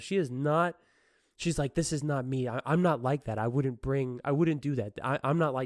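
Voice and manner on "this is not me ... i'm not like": put-on hysterical, protesting woman's voice. Retelling how the accused woman protested: imitating a hysterical woman. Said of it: "This woman's fucking hysterical".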